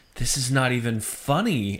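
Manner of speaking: usual speaking voice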